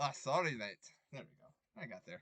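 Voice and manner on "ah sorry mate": very loud, high stab at Scottish accent. Asked for a Scottish accent you say you can't do, attempting it anyway. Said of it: "I don't know how to do a Scottish accent".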